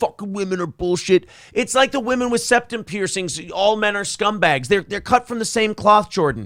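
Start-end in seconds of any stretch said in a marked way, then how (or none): 0.0-1.3 imitated, mock ranting. Imitating men turned down by women, who go off: imitating a rant. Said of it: "they go off and they rant and they rave".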